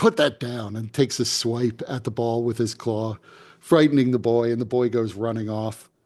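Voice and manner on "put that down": sudden snarled angry growl. A displacer beast snaps at a boy playing with a ball, angry growl. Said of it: "suddenly gets angry and growls".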